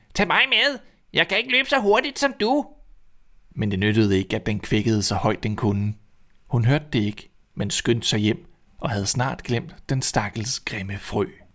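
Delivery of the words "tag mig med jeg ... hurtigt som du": shrill, very high shouted cry. Narrator reads the frog calling after the running princess, shouting. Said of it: "råbte frøen".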